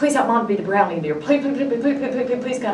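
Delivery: high, desperate, rushed, begging tone.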